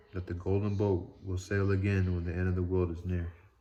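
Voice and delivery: ordinary delivery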